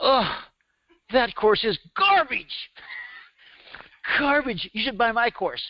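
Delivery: put-on heavy, thick Bronx accent, pitched very high. Retelling what a man the speaker contacted said, in his thick bronx accent. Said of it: "Larry's got this thick Bronx accent".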